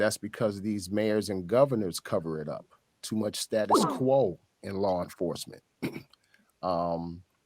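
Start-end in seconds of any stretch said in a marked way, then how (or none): none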